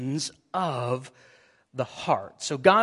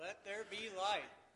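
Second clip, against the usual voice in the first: a little louder, with emphasis; 5 semitones higher, 18 dB quieter than usual. Saying the verse again after being asked: a little louder, emphasized. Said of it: "just a little bit louder".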